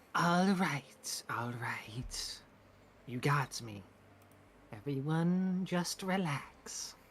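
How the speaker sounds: otherworldly, ethereal banshee-like voice. Player character throwing their voice to someone holding a rusty sword, ethereal banshee-like voice. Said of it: "speak in a very ethereal, almost banshee-like tone".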